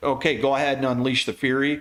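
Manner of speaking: usual speaking voice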